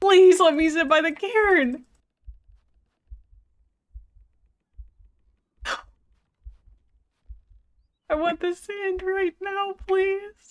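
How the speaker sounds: high, tearful, frustrated pleading voice. Begging the game to let you sit by the cairn, in tears from frustration. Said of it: "I'm actually in tears".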